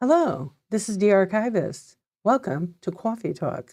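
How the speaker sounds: synthetic computer-assistant delivery. Speaker demonstrates the voice friends told them to do: ai voice. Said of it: "I have to do like an A I voice".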